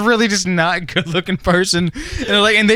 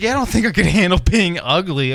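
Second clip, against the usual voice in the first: normal talking voice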